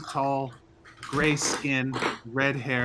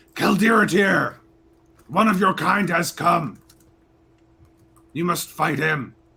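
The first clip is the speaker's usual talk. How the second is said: loud, raised, hollering giant voice; 5 semitones higher, 7 dB louder than usual. Narrating the scene, the speaker voices the fire giant yelling across the room. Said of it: "he yells to the other side of the room".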